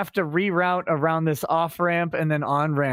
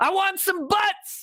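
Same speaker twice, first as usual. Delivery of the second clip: mock commanding scream, very high and shrill; 14 semitones higher than usual. Retelling a Top Gun scene where a man screams in an office: imitating someone screaming. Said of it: "he's just screaming at him".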